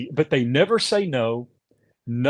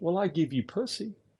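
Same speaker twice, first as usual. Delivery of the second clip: utterly flat, dead-serious deadpan, put-on; 4 semitones higher, 10 dB quieter than usual. Retelling her reply during a marriage argument: imitating someone dead serious. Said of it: "serious as a heart attack".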